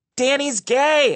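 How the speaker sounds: put-on high, slow, loud taunting yell in kid voice.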